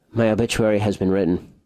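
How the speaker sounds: sleepy, half-asleep voice. Quoting what Mayor Murray says, in a Mayor Murray impression. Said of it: "here's where I do my Mayor Murray intro, my, my Mayor Murray voice here".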